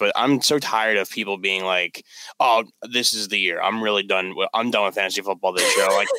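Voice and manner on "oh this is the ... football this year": ordinary delivery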